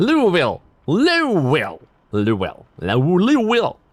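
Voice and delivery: marbles-in-mouth Louisville accent. Demonstrating how Kentuckians say Louisville, with marbles in the mouth. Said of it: "Always said like you got marbles in your mouth".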